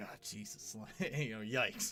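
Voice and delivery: muttering under breath. The governor reacting after a visitor leaves, muttering under breath. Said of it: "he sort of mutters something like".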